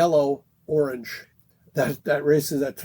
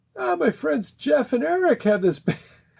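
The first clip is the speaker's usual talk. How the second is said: high-pitched put-on English accent; 11 semitones higher than usual. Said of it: "my English accent isn't so bueno".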